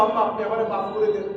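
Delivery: ordinary talk, nothing marked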